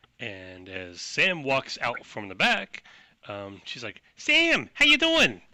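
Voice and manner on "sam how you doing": put-on loud New York accent, pitched way up. Retelling a woman greeting Sam as he walks out, New York accent. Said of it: "She's got a sick New York accent that I cannot really keep up for very long".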